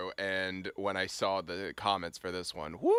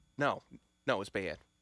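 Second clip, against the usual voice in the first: thick, put-on Philadelphia accent. Agreeing that a team played badly, in a Philly accent. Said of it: "that, like, Philly accent you just did".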